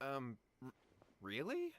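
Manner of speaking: halting, faltering stammer with swooping pitch. Answering a recommendation of two helpers, voicing the character: hesitant. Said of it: "Is that hesitation that I detect in your voice?".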